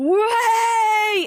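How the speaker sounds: angry, very loud, shrill, high, stretched-out yell. Retelling a drama scene where the hero yells a name: imitating a yell. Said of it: "And then he just yells".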